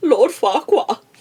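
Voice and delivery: put-on Dutch accent. Quoting the little pigs from a story she loves, in a dutch accent. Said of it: "they have an accent from like Holland and they're like".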